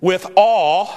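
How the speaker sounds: stress on ALL.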